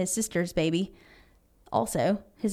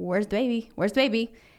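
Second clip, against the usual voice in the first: frantic, panicked, freaking-out tone. Telling a story, acting out a mother waking Tony, imitating a panicked mother. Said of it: "freaking out".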